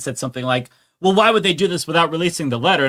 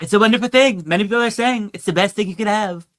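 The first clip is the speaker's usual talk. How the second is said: weird, high put-on voice; 5 semitones higher than usual. Reading a birthday letter aloud, then adding a line: weird Donald Trump voice. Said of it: "the weirdest Trump voice I've ever heard".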